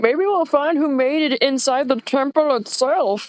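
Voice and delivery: talking through a mouthful. Player voices Iris chewing jerky and pointing, Iris talking with mouth full. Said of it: "with her mouth full of food, she's just like".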